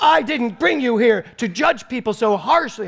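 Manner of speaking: high, loud screaming rant. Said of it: "And she is going screaming".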